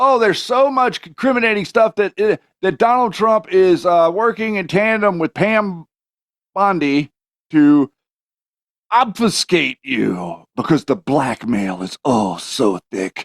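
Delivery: heavy, slow, sing-song, mocking sarcastic tone. Speaker addressing his audience, in a sarcastic tone. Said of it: "I'm saying it in a sarcastic tone".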